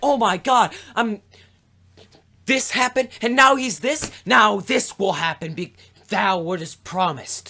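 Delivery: high-pitched, loud, overjoyed gushing. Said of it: "She is overjoyed about everything".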